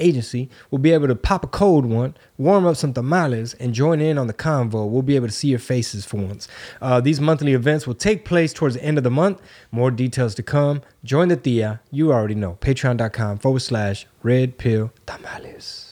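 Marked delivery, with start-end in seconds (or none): 12.6-15.9 soft, hushed whisper. Giving the patron page address at the end of a plug: whispering. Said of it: "I like to whisper that part".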